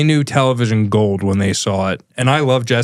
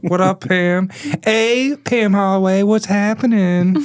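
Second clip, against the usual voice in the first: goofy, very high silly put-on voice; 10 semitones higher than usual. Saying hello to another speaker's mom on the show, the speaker uses a put-on voice. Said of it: "I don't know why I did that voice".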